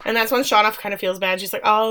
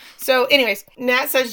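plain

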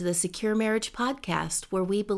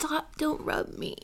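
slow, breathy whisper through tears; 7 semitones higher, 5 dB quieter than usual. Recording a podcast intro while the other speaker rubs them: crying while talking. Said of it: "Don't start crying again".

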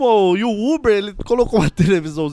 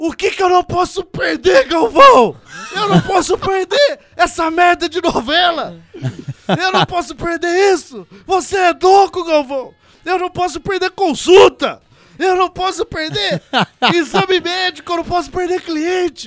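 put-on ranting yell, high-pitched; 9 semitones higher, 4 dB louder than usual. Retelling how the Uber driver yelled back at the television, mock-shouting. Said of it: "ele começou a gritar com a televisão".

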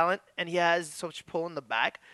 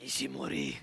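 low, hushed, breathy near-whisper, voice dropped; 8 dB quieter than usual. Showing how to say the wrestler's name: lowered voice saying a name. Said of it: "you gotta lower your voice when you say Ishimori".

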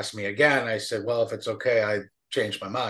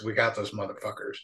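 whispered in a deep, low voice; 5 dB quieter than usual. Speaker retells what a man told him: retelling a deep whisper. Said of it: "he kind of whispers in a deep voice".

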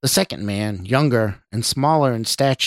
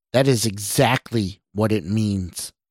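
plain

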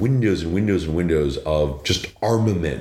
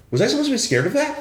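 play-acted, very high-pitched, baffled puzzlement. Retelling how Will blinked, looked at the speaker and asked; retelling a puzzled question.

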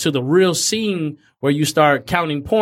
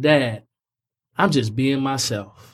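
holding back tears, much lower pitch; 2 semitones lower than usual. A father recounting what his son told him, holding back tears. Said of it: "I'm going to hold back the tears".

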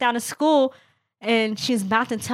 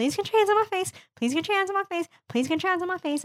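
put-on calm, pitched up, repeated three times; 8 semitones higher, 4 dB quieter than usual. Retelling what her sister said to a teacher, retelling a calm request. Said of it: "I said to her calmly 3 times".

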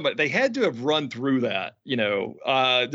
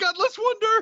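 acted-out, shrieking, very high scream. Recounting a live TV segment, imitating Hart screaming. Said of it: "And Hart screaming".

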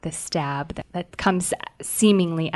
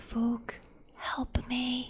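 very quiet, hushed, pitched-up whisper; 8 semitones higher, 10 dB quieter than usual. Voicing a kneeling, compelled character calling for help: quiet whisper to herself. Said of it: "quietly whispers to herself".

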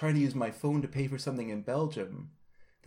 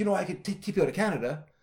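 put-on anger, higher pitched; 6 semitones higher than usual. Recounting landing in Canada from Britain, the speaker imitates a customs officer: imitating an angry customs officer. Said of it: "a really angry customs guy is like".

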